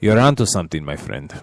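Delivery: generic put-on European accent. Agreeing with the other speaker about a best-of-three format, using a generic european accent. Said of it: "my tried and true generic European accent".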